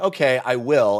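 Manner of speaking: ordinary talk, nothing marked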